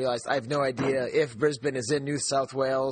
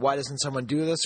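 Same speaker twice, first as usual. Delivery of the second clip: ordinary talk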